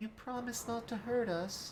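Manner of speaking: put-on tiny small-child voice, very high and soft. Voicing a nervous creature asking for a promise: little child's voice. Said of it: "it sounds like the voice of a little child".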